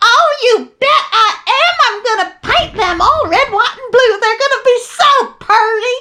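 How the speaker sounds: very high, put-on, catty Southern voice. Retelling a reply to a neighbor about tires: imitating a catty southern woman voice. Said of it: "assuming my best Southern bitch voice".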